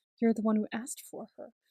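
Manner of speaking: quiet muttering under the breath. Retelling what the director said off to the side: imitating a mutter under breath. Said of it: "under his breath off to the side was like".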